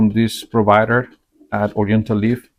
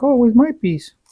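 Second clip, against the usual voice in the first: put-on voice, pitched very high; 13 semitones higher than usual. Trying something that smells like milk chocolate, the speaker predicts the wife's reaction, imitating wife's voice. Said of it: "Just with that voice".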